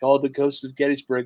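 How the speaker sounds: ordinary delivery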